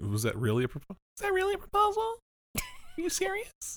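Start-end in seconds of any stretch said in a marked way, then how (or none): 1.2-3.8 very high, swooping pitch, upset and disbelieving. Speaker recapping a scene acts out the character's reaction: Nina voice. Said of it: "you should do the Nina voice".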